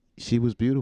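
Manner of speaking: ordinary talk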